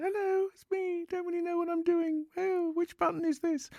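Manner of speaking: put-on very high, squeaky, twenty-year-old voice. Speaker recalling starting out at age twenty, imitating own squeaky young voice. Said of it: "I had a very squeaky voice age twenty".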